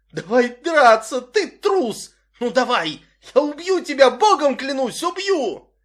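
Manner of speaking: full-throated, shrill, loud screaming. A narrator voicing a boy slumped against a jukebox, screaming at his older tormentors. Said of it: "завопил".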